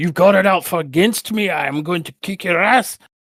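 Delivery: put-on Scottish accent, pitched very high. Retelling a wrestler threatening the referee: Drew McIntyre Scottish accent. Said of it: "that was an interesting accent".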